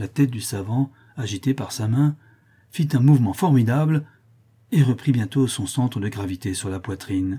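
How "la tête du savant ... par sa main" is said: plain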